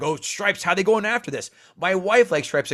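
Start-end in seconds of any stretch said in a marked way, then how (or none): 0.0-1.5 irate, angry, put-out griping tone. Retelling how people reacted online today, imitating angry people. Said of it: "People were getting mad today".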